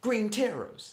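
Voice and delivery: belted out high and badly. Speaker tries a voice they admit they can't do: bad Naruto impression. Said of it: "That's my worst accent".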